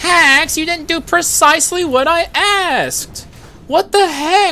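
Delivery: very high, nerdy, pedantic nitpicking voice. Streamer acting out his Twitch chat's reply to him, nerd-emoji Twitch chat impression. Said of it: "my impression of the nerd emoji".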